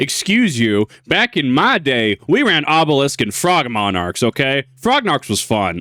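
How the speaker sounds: put-on sarcasm, slow, sing-song, swooping drawl. Replying jokingly to the other speaker's remarks about the cards: put-on sarcasm. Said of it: "Obviously, I'm being sarcastic here".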